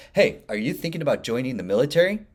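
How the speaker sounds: self-assured, firm and strong delivery. Showing how to read a teleprompter script line: confident, strong delivery. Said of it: "Let me say that strong".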